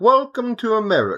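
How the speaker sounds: fake, clumsy British accent. After asking how to say it in a British accent, trying it: bad British accent. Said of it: "I can't say that".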